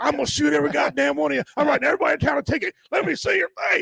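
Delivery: very high, rough, enraged, furious tirade. Retelling how a man with a gun came out of his car: imitating an angry man. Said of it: "He was mad".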